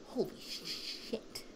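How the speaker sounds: soft, slow, whispered awe. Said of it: "they're like".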